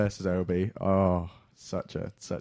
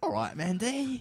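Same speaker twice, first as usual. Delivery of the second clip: put-on Cockney accent, much slower; 12 semitones higher, 3 dB quieter than usual. Imagining how a co-host would say a name, in a Cockney accent. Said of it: "Sounds like you say Mandy in a Cockney accent".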